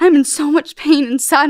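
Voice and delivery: mock tearful words spoken through sobs. Retelling what was said while crying on a tape: imitating own past crying. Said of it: "I'm crying".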